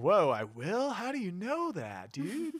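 put-on deliberately bad stoner voice, high, swooping, sing-song. Recapping a scene where Equius orders Gamzee to get sober: bad Gamzee stoner voice. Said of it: "It's a bad stoner voice".

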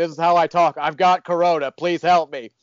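acted-out shouty cadence, high, mild yelling tone. Retelling what a coughing man said, imitating him yelling. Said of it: "I'm not yelling".

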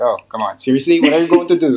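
incredulous, disbelieving scoff through laughter. Retelling parents' reaction to a move away: imitating laughing disbelief. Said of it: "they're all laughing like".

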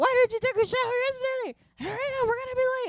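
mock yelling. Retelling how someone burst in at seven, imitating someone yelling. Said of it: "yelling at Emily".

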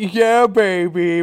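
loud, called-out sports-announcer style. Pushed by the others to do it, the speaker does a Dick Vitale impression. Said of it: "He's like".

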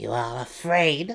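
sly, teasing, probing tone. Hearing him say he fears hunting his brother again, the Matron Mother asks slyly. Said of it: "Malice asked slyly".

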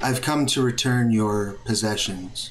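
gender-neutral voice. Narrator voicing an unseen speaker behind the players; androgynous voice. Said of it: "then you hear an androgynous voice".

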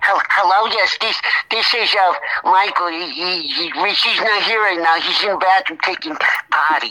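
put-on little boy voice, childlike. Showing how he dodges unwanted phone calls, in a put-on little boy voice. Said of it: "That's my little boy voice".

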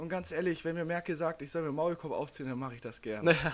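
plain

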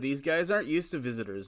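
normal talking voice

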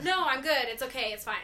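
acted panicky tone. Retelling her first day, turning down a man's offer of help, acting out past panic. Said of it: "I think I was kinda like panicky".

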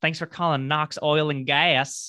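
put-on ridiculous Texas accent. Retelling movie characters answering company phones, ridiculous Texas accent. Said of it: "the most elaborate, ridiculous Texas accents ever".

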